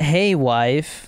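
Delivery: ordinary talk, nothing marked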